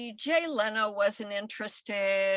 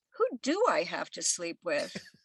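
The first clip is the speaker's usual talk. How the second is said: acted, heavy, venomous sarcasm with swooping pitch; 3 semitones lower than usual. Recounting a talk with Bill, the speaker retells her venomous sarcastic reply. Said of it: "very sarcastically, with venom dripping from my fangs".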